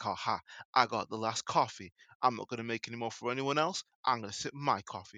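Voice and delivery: put-on smug, gloating tone. Retelling an ad where a coffee taker walks around: imitating a smug gloat. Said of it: "walking around all smugly".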